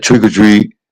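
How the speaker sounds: easy, casual, everyday delivery. Retelling going trick-or-treating as a grown kid: imitating own deep voice. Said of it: "my voice got deep when I was younger".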